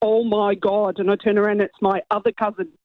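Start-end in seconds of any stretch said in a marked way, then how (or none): 0.0-1.0 put-on Derry accent. Retelling his cousin from Northern Ireland exclaiming, in a thick Derry accent. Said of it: "in a really thick Derry accent".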